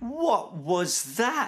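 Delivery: gasping, very high voice. A bedtime story narrator reads Snip's line; gasping. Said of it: "Gasped Snip".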